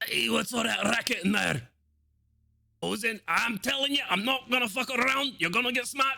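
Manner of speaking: put-on very high-pitched elderly man voice, shouting. Narrating a tabletop game, the speaker voices the grandfather yelling from another room. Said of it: "Is that grandfather yelling at us?".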